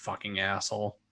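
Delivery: muttered under breath. In a tabletop game, the narrator voices a character muttering under her breath. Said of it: "you hear kind of under her breath".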